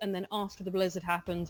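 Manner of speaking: plain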